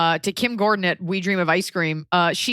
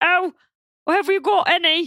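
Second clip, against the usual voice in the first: very high, slow, warbling dim-witted put-on voice; 11 semitones higher than usual. Explaining where a voice came from, doing a warbly Monty Python idiot voice. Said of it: "the idiot in the sketch is always like ... that sort of warbly".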